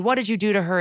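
plain

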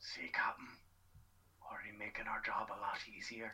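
leaned-in, hushed, breathy whisper. Leaning over to the captain to speak privately, whispering. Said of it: "I lean over to Captain and whisper to him".

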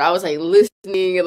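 plain

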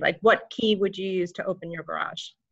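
ordinary talk

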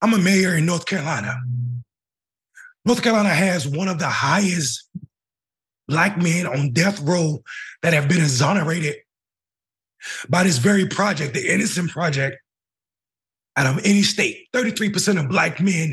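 choked-up, emotional voice. A North Carolina mayor speaking to an audience about exonerated men, choked up. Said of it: "I don't know how to talk about this without getting choked up".

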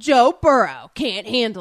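sports promo announcer narrator delivery. Doing a narrator NFL promo impression, in an NFL promo narrator voice. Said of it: "that was your, like, narrator NFL guy promo impression".

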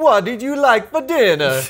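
put-on Italian accent. Voicing an Italian butler named Alfredo: bad Italian accent. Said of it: "I don't do Italian accents well".

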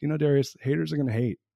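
put-on playful, funny Canadian accent. Retelling a friend's late-night reply over soup: imitating Ken Sim's funny Canadian accent. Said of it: "he has this funny Canadian accent".

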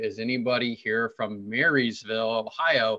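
ordinary talk, nothing marked

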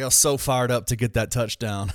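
ordinary talk

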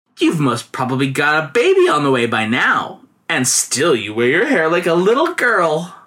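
playfully mocking, sing-song teasing tone. Female companions find a girl's secret and tease her about her hair, teasing. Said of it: "they teased the girl".

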